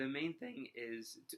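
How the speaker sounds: voice cracking. Host of a group book read, voice cracks mid-sentence: voice cracking. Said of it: "wow, my voice cracked".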